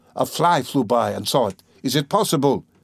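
ordinary delivery

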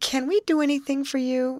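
slightly stammering. A young woman offers help to a man she has met, half stammered. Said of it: "half stammered Betty".

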